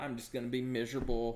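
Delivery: ordinary talk, nothing marked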